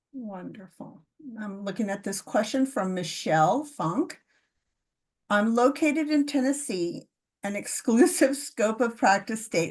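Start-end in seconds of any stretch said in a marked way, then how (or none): 5.3-9.7 words broken up by laughter. Reading aloud a submitted question, laughing while reading. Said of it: "Sorry, I'm laughing".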